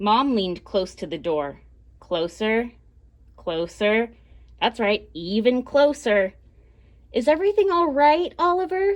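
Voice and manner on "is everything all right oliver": soft calm whisper, much higher pitch. Narrator reading Mom asking Oliver through the bathroom door, in a calm mom whisper. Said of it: "She whispered in her calmest mom voice".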